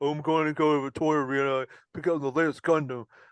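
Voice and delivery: thick-tongued voice, as if tongue too big for mouth. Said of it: "tongue that sounds like it's way too big".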